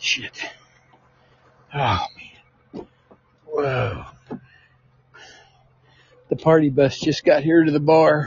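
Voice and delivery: panting, breathless. Speaker reaching their vehicle outside the bar, out of breath and panting. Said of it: "but I'm out of breath".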